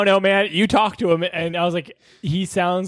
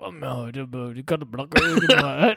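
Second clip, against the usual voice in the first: put-on stammering voice, lower; 5 semitones lower, 4 dB quieter than usual. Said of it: "He literally sounded like Bobby Boucher".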